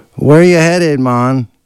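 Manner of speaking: put-on Jamaican accent, pitched very high. Retelling meeting a stranger in a car, quoting him in a Jamaican accent. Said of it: "he sounded Jamaican".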